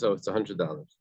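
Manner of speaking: ordinary delivery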